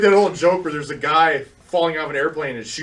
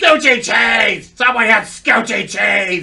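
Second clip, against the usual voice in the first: put-on shrill screaming ad voice, higher and louder; 6 semitones higher, 6 dB louder than usual. Retelling a radio commercial, imitating Gilbert Gottfried screaming. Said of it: "Gilbert Godfrey screaming".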